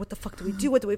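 soft, hushed half-whisper, barely under the breath. Retelling hiding in a room while someone knocks: imitating a half-whisper. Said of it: "We're whispering".

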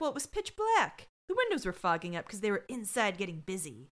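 ordinary talk

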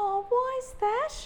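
very high, condescending, patronizing bedside tone. Recounting a nurse's reply to their fear before a PET scan: imitating patronizing nurse. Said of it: "I'm sorry about the patronizing voice".

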